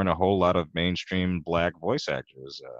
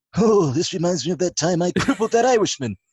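very high, loud, pushed-out put-on cartoon voice; 13 semitones higher, 7 dB louder than usual. Asked for five of his best voices, starting with a Mr. Burns voice. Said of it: "there's Mr. Burns".

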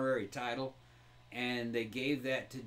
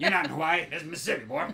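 loud, booming Southern cartoon drawl; 4 semitones higher, 7 dB louder than usual. Imagining Foghorn Leghorn seeing someone's outfit, doing a Foghorn Leghorn voice. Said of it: "You almost sounded like Sling Blade there".

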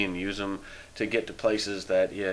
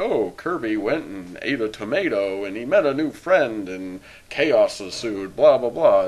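gentle, soothing, nice storybook narrator voice; 7 dB louder than usual. Describing a kids' game's story narrator, speaker imitates him: soothing storybook narrator impression. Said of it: "he says it in a very soothing, nice voice".

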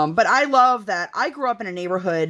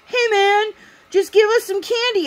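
play-acted very high teenager's holler; 3 dB louder than usual. Retelling a teenager on the porch demanding candy: imitating a teenager yelling. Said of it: "yelling at him".

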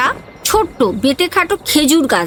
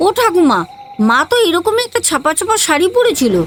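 ordinary delivery

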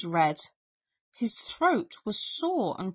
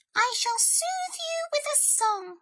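announcing voice pitched very high. Narrator voices Mouse answering Bear, who says he grows weaker, Mouse announcing.

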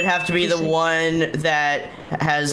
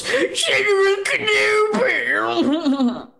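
high, drawn-out exclamatory cry. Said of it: "the robot goes".

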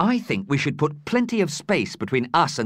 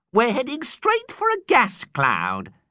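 bright, cheery, sing-song delivery; 9 semitones higher than usual. Ada answers a question about the problem they're flying into, cheerful. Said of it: "Ada said cheerily".

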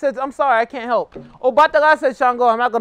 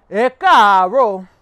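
louder with varied tones; 2 semitones lower, 5 dB louder than usual. Teaching the correct tones of a Yoruba greeting: fluctuating Yoruba tones. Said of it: "You have to fluctuate it with the tones".

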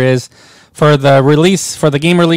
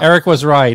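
usual speaking voice

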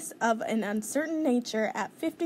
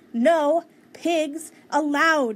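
high, loud, outright yelling; 5 semitones higher, 7 dB louder than usual. Eugenia orders Mercy out of her yard, shouting. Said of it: "Eugenia shouted".

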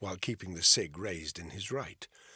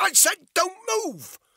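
very high, very loud, shrill screamed voice; 11 dB louder than usual. A woman waving a weapon repeats her order as a man steps closer, screaming. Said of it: "Bethany screamed".

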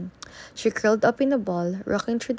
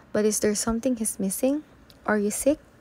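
ordinary delivery

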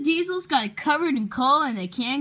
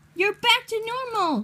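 cheerful, delighted, happy, pitched-up delivery; 9 semitones higher than usual. James answers Emily's question, happily. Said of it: "said James happily".

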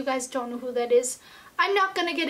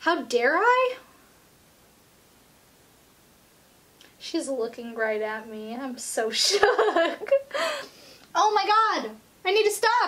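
tearful, crying while talking, higher; 3 semitones higher than usual. Watching a message she booked for herself, crying while talking. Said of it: "I promised myself I wasn't gonna cry".

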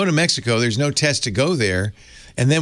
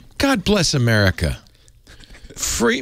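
sing-song Irish accent; 4 semitones higher than usual. Joking with another speaker, exclaiming in an Irish accent. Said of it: "Was that your Irish accent that I heard?".

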